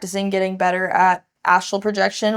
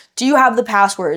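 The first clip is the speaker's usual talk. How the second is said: loud screaming at full force; 3 semitones higher, 4 dB louder than usual. Retelling a dream where the dad asks for passwords: imitating someone screaming. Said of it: "screaming at me".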